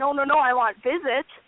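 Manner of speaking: acted near-tears pleading. Recounting a cancelled visit, imitating own past self pleading near tears. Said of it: "about to cry".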